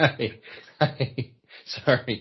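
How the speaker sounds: words breaking up with laughter. Answering another speaker's question about old tv shows, laughing while talking. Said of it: "I'm laughing really hard".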